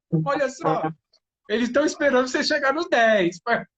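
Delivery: high, loud taunting shout. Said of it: "o Ícaro gritando lá".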